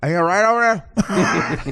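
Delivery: words pushed through full mouth. Retelling a late-night call to a sister: imitating talking with mouth full. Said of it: "called her with my mouth full".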